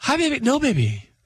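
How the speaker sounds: very high-pitched voice used for a partner. Imitating a buddy playing golf who talks to his girlfriend, in a high girlfriend voice. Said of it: "a girlfriend voice where they go higher".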